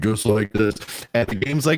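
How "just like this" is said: put-on, deliberately deep, low voice. Retelling answering a game's question, imitating own put-on deep voice. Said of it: "so I'm talking really deep".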